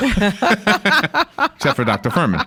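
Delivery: slow, high-pitched, laughing aside.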